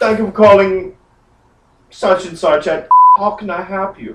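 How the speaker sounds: put-on German-accented character voice. Speaker recounting a phone call, answering as the person who picks up: imitating Klaus's German accent.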